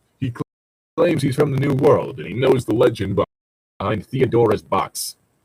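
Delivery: plain reading voice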